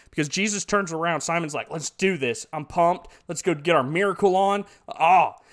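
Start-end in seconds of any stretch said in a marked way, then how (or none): none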